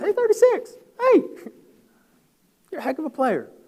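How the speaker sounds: very high, sing-song, swooping voice. Retelling a man calling after him from behind as he walks off the field, real high voice. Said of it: "in real high voice".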